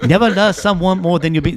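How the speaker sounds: put-on Chinese accent. Repeating own saying as a mock proverb: put-on Chinese voice. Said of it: "My Chinese voice come out".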